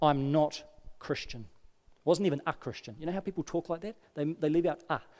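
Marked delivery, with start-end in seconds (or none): 0.0-1.4 said firmly with heavy emphasis. Retelling a coworker's reply to an invitation: imitating an emphatic statement. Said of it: "she just said very emphatically".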